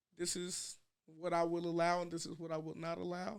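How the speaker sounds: ordinary talk, nothing marked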